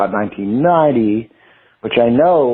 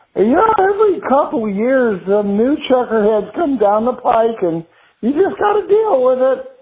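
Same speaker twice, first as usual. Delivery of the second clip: small, very high-pitched little voice; 13 semitones higher than usual. Retelling what an artist always said about new art: little Craig Kaufman voice. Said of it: "with his little Craig Kaufman voice".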